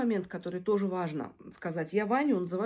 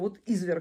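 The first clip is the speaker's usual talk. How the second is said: usual speaking voice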